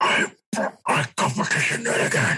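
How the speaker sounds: put-on whispered, gravelly old-man voice.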